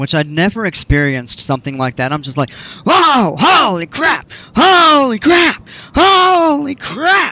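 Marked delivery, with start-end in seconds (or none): 2.8-7.3 acted, top-of-the-lungs, very high, very slow drawn-out scream. Retelling riding a roller coaster for the first time: imitating own past screaming. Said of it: "I'm screaming at the top of my lungs".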